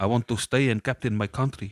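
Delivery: imitated South African accent. Retelling what he said when asked to go home, south african accent. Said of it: "Was that South African?".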